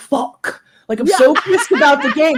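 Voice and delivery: put-on tough-kid voice. Imitating a teenager cussing to sound badass: imitating a teen trying to sound badass. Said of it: "trying really hard to cuss and sound like a badass".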